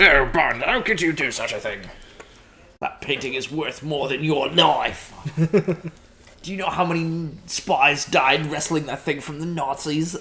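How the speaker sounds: British accent that wobbles, slips and drifts off. Riffing on a Bond scene, the speaker scolds Bond in an attempted M accent. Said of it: "I don't know where my M accent was going there, but that was not British".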